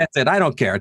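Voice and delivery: plain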